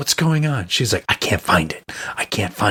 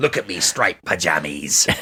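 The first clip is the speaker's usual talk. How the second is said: pirate voice, much lower pitch; 4 semitones lower than usual. Retelling what they said to someone who couldn't understand them, in a pirate voice. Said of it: "started talking like a pirate".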